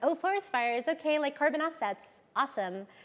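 put-on high, exaggerated, laid-on Valley Girl accent. Speaker imitates how people here talk about it, in a Valley Girl voice. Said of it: "I love that Valley Girl voice".

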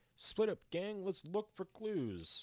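bad, very high, squeaky, swooping cartoon voice. Reacting to a clue token on a pulled card, doing a bad Fred impression. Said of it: "That's a bad impression of Fred".

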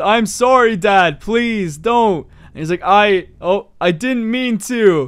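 put-on sobbing. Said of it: "Starts sobbing".

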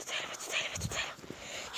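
soft, unvoiced, urgent whisper.

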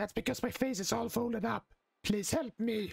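deliberately bad, croaky, hoarse, high-pitched character voice. Voicing Toad after admitting they can't really do him, in an awful hoarse Toad voice. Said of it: "it's gonna sound very hoarse".

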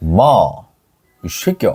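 offhand, casual Gyeongsang satoori accent. Showing how people in gyeongsang would actually say it, gyeongsang dialect accent. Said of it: "경상도는 ... 이렇게 하지".

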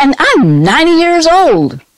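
very high-pitched, loud shout. Retelling how the father, remembering his recent birthday, shouted out. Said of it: "he shouted out".

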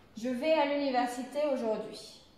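pitch falls on aujourd'hui, statement tune. Showing French affirmative sentence intonation: pitch falls at sentence end. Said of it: "donc on le dit comme ça".

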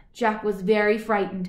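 ordinary delivery

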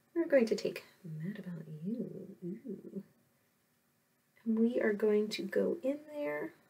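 absorbed, focused, concentrating, half to self. Speaker concentrates while applying a darker color: very quiet. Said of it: "I'm being very quiet".

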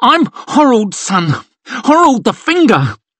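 very high-pitched, stammering, pleading voice. A narrator reads Crandall speaking after letting his hatchet drop, stammering. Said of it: "he stammered out".

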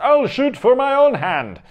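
terrible shrill, high, loud squealing character voice. Speaker recounts a scene from Brave, doing a terrible Merida impression. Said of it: "That was a terrible impersonation".

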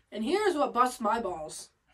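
ordinary talk

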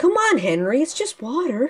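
high-pitched cartoon train engine voice. Told to go for it, the speaker does his new Thomas impression. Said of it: "I can do my new Thomas's impression".

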